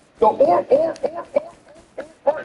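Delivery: stuttering, stuck looping on the word "or". Mocking a guest who stammers over the word "or": imitating stuttering. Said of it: "he just began stuttering".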